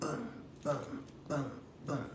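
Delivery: soft, whispered, hammering boom sounds.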